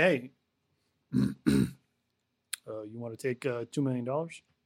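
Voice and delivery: dropped low, creeping slowly. Imitating a coach offering a released quarterback a contract: creepy Bill Belichick impression. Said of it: "in the creepy way you just did".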